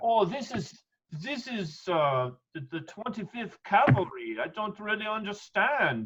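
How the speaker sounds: very high, put-on French accent, elf voice. Voicing an elf character puzzling over an inscription: french accent. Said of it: "you gotta do it with the French accent".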